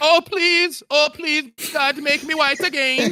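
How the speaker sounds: put-on thick, very high, begging Eastern European accent. Retelling a scene where a fleeing woman begs, in a thick Eastern European accent. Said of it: "she has also got this thick Eastern European accent".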